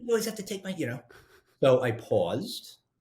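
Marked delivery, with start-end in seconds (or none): 0.0-0.7 mock, very high-pitched, sharp snapping voice. Retelling how a daughter answered a request: imitating Ashlyn snapping. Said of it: "She snaps at me".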